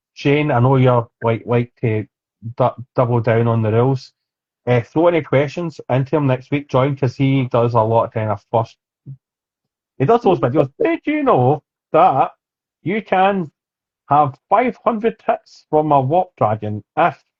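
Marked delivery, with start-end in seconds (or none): 10.9-17.1 put-on generic stock English accent. At the end of the show, imitate next week's guest in a generic english accent. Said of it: "That is my generic English accent".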